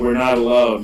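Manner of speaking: normal talking voice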